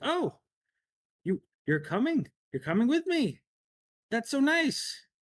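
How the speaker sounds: very high-pitched, loud voice. Voicing Lady Silverhand as she asks if the party is coming: Lady Silverhand voice. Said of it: "you can see Lady Silverhand's ... and she's like".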